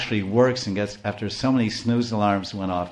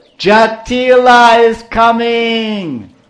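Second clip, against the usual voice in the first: loud, shrill, drawn-out monkey screech; 13 semitones higher, 12 dB louder than usual. Retelling the story, the monkey Kakati raises the alarm: screeching old monkey voice. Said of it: "She screeched out in her loud, old, wrinkled, withered monkey voice".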